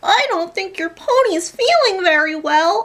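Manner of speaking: very high, slow, grating, obnoxious narrator voice. Describing the guiding voice in a pony game, imitating an obnoxious lady's voice. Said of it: "The lady's voice was so obnoxious".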